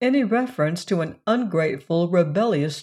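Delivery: ordinary delivery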